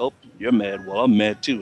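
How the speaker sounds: put-on sarcastic, mocking voice. Retelling how the coach mocked a pouting player: imitating Calipari's sarcastic mocking. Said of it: "instantly go to sarcasm like that".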